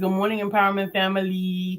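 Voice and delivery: ordinary talk, nothing marked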